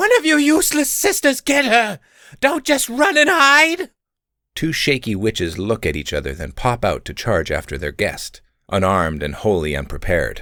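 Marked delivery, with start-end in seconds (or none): 0.0-3.9 very high, shrill, frantic, panicky shrieking. The witch now in charge shrieks at her sisters to go after the woman: shrieking orders. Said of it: "Slight footsteps begin to creep toward their hiding spot as the current witch in charge, [name], cowers and grips her robes even tighter than before. / [name] squeals with her hands raised. / [name] s".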